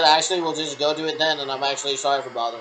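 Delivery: ordinary delivery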